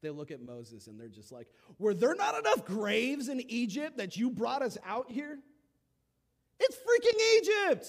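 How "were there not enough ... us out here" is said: put-on sassy, sarcastic tone, higher and louder. Retelling the people's complaint to Moses: imitating a sassy, sarcastic retort. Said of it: "They're getting sarcastic with Moses".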